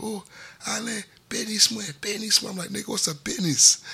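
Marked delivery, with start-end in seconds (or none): 0.0-2.0 tearful, high, sobbing voice. Retelling a guy calling on the phone, imitating someone crying on the phone. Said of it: "he's fucking crying on the phone".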